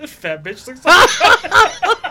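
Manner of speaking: high, loud, slow, laughing mock delivery.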